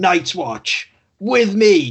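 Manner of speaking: put-on high, drawn-out battle scream. Describing a character charging with his sword aloft, retelling a scream. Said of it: "just screaming".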